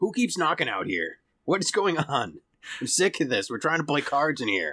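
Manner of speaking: annoyed, irritated voice. Voicing a doorman glaring through a door viewer: glaring, irritated doorman. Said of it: "you see some eyes glaring through it".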